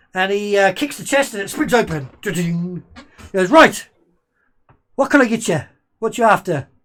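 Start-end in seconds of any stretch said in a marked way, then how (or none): 3.5-6.6 loud, shifty, leering elf voice. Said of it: "a quite a leery elf".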